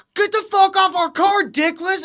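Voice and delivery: high, brash, mouthy put-on trash-talking jeer. Retelling a movie scene outside a nightclub: imitating Sarah Silverman talking trash. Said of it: "talking mad shit".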